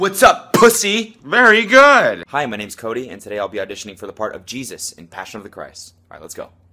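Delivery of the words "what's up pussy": high, loud voice with more energy. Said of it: "I need more energy, [name], all right? Try again".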